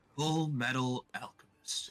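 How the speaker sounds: very quiet, somber, sad, darker reading. Asked to say the title again in the sad, darker version. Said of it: "can you do the sad, like darker one".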